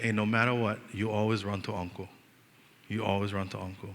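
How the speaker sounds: hushed, soft, secretive half-whisper. Retelling what was said into a niece's ear: imitating own half-whisper. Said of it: "I whispered in her ear".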